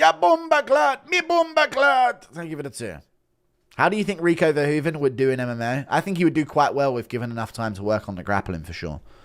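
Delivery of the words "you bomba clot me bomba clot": put-on high, slow, drawn-out speech in Jamaican accent. Imitating Volk waking up after the KO, doing Volk with a Jamaican accent. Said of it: "Impression of Volk waking up with a Jamaican accent".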